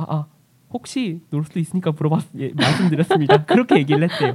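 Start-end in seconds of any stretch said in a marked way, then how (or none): 0.0-2.4 acted, mock-flustered stammering stumble. Speaker retelling how a flustered friend answered a stern remark, imitating flustered stammering. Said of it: "당황해가지고 거기서 할 말이 생각이 안 나가지고".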